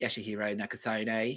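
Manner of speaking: soft, put-on Australian bogan accent.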